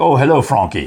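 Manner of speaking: put-on babyish, baby-talk voice. Asked to do baby talk, imitating how an uncle talked: imitating Uncle Bill's baby talk. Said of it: "trying to remember how Uncle Bill would talk. He's like".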